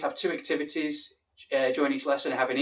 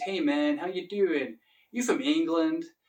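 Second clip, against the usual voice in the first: casual American accent, put on. Showing off accents from living in the usa and england, doing an american accent. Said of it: "I could do the American accent".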